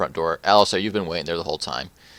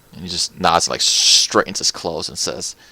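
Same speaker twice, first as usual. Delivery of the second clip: plain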